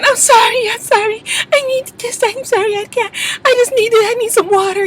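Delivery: weepy, very high crying through tears. Retelling how someone on the show apologized: imitating someone crying. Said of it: "she was crying".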